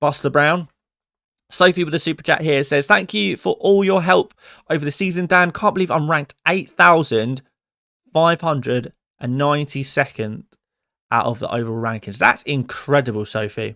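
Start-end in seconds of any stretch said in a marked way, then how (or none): none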